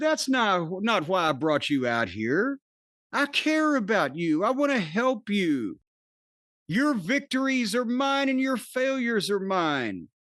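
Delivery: calm, steady, composed and unruffled delivery. Retelling what Jericho said to the speaker, imitating Jericho speaking calmly. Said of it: "Jericho calmly said".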